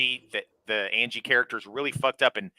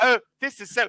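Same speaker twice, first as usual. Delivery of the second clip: bad, failed British accent attempt, higher pitch; 12 semitones higher than usual. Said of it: "I can't do British accent".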